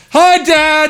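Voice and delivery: acted loud shouting. Retelling a greeting called out on walking into the gym: retelling a loud shout. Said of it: "really loud in the middle of the gym".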